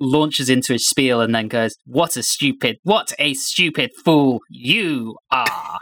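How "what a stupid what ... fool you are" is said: very slow character voice, every word drawn out. Quoting the security chief's line at the showdown: Skeletor voice. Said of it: "I make him sound like Skeletor".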